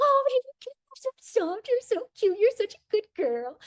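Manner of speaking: sky-high, squeaky, cooing voice. Explaining a self-talk habit, showing how you'd talk to a puppy. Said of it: "talk like you are with a puppy".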